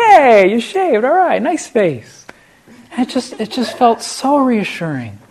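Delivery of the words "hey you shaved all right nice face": put-on effusive, warm tone, higher and louder. Retelling how the director greeted a freshly shaved face: imitating an effusive, warm greeting. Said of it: "very sort of natural, effusive, warm, accepting".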